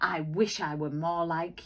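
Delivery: plain reading voice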